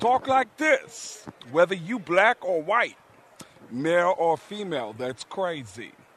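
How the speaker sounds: put-on Bronx accent. A Bronx native showing how everybody there talks, Tracy Morgan-style Bronx voice. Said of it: "everybody in the Bronx sounds like Tracy Morgan".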